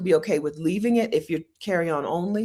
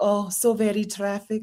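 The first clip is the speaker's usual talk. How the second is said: failed, clumsy attempt at a Filipino accent; 4 semitones higher than usual. Retelling a woman's reply when the speaker had to catch a bus, attempted filipino accent. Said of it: "That's not a Philippine accent".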